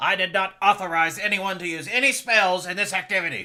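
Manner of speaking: very high, very loud, aggravated shouting. Narrating a game, the leader yells out from around the corner, aggravated yelling. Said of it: "is going to yell out".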